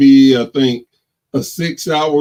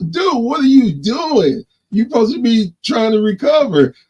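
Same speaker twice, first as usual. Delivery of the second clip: put-on yell, pitched higher; 8 semitones higher than usual. Retelling being scolded by the co-CEO for working from bed: imitating Brady yelling. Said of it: "he yelling at me like".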